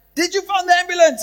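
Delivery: mock screaming. Retelling asking a man filming a dying lady: retelling own screaming. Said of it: "now I'm screaming at him and saying".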